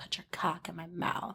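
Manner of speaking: put-on raspy voice. Imagining how the actress Tara Reid would say a line: Tara Reid voice. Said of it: "it just sounds like this".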